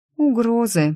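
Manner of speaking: hesitant, unsure. Asked what the message says, the narrator answers: timid. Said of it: "несмело произнесла я".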